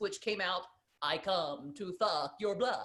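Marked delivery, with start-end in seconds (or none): 1.0-2.9 put-on lisping voice, lower and quieter. Recounting a bit where he did Dracula with a lisp: Dracula voice with a lisp. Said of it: "decided to do Dracula with a lisp".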